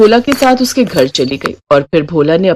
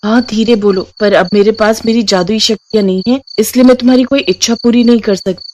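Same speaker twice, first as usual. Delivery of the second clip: ordinary delivery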